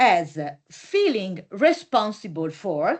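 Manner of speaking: "feeling" heavily stressed in a slow phrase. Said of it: "and I underline the word feeling".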